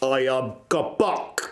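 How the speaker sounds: put-on broken English accent. Game master voices a character introducing himself, as Kabak in broken English. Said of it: "He will say in broken English".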